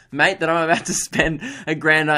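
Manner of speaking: usual speaking voice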